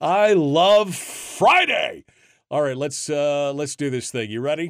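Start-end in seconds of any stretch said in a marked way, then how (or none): 0.0-2.0 high-pitched shouted cry, let rip. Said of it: "I didn't mean to yell in your ear".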